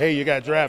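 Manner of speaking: ordinary talk, nothing marked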